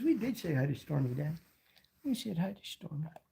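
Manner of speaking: put-on dog voice. Speaking for the dog after greeting stormy: voicing the dog. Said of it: "She says".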